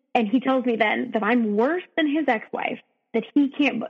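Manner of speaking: plain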